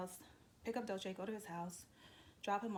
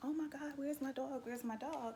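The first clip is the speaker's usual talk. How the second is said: panicked screaming, pitched up high; 6 semitones higher than usual. Telling of arriving and not finding their dog, reenacting their own screaming. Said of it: "I'm like screaming like".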